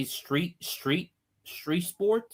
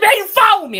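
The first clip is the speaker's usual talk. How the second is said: shrill, high, furious screaming at full volume; 12 dB louder than usual. Describing players who get mad over fouls; imitating a player screaming. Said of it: "why you screaming?".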